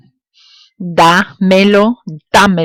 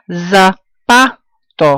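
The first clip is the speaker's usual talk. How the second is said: slow, stretched "zapato" with stress on PA. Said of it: "Look, second to last".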